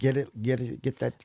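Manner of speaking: mock urgent, pressing scream. Recounting a chaotic chicken-house chase, speaker re-enacts what he screamed: retelling a scream. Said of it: "I'm screaming at it".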